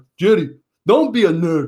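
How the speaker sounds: caustic, biting delivery in a put-on Korean accent. Speaker retells what a Korean guy said to Jerry: imitating a Korean accent. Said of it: "in his Korean accent, he's like".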